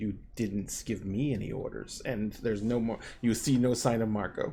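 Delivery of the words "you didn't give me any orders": very soft, quiet, low hushed voice. Game master voicing an unseen speaker answering a player, in a very quiet voice. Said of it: "a very quiet voice from nowhere in particular go".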